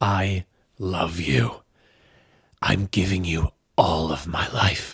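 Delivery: tearful, choked-up, slow delivery. Quoting a favourite film line from memory, tearing up. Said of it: "I'm honestly tearing up just saying that".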